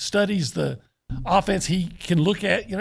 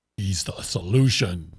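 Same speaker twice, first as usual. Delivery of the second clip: dramatic movie-trailer announcer voice, very low; 11 semitones lower than usual. Prompting another speaker to redo a line, demonstrating a movie phone voice. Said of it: "now do it in like a like a movie phone voice".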